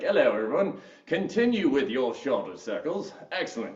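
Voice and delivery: poorly done fake posh, classy British accent. Workout instructor leading a class through shoulder circles, in a bad british accent. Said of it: "I'm going to stop with my British accent".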